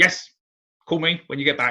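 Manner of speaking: curt, offhand, high-pitched and loud.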